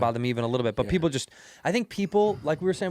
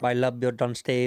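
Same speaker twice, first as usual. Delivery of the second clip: put-on Filipino accent with Irish mixed in; 2 semitones lower than usual. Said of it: "I'm trying to do an accent of a Filipino Irish person".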